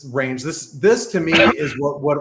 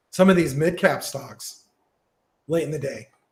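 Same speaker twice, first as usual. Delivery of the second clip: voice giving out. Explaining a market chart sixteen hours into the day, voice giving out. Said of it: "I just lost my voice".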